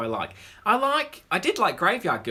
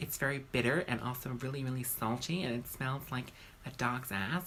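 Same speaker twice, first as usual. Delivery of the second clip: very soft, low, creepy, hushed twee sweetness; 4 semitones lower, 10 dB quieter than usual. Insisting you sound just like the woman under discussion, do a creepy, twee impression of her. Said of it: "You sound creepy".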